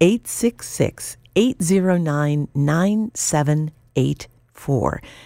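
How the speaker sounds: said slowly, in an unhurried way. Asking radio listeners to call in a gift, reading the phone number slowly. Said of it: "I'm going to say it slow".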